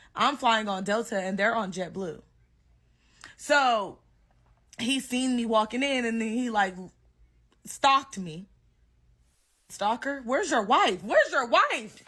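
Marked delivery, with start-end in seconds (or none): 9.7-11.8 high, shouted yelling. Telling how they confronted a man who stalked them: retelling a yell. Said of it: "Now I'm yelling like".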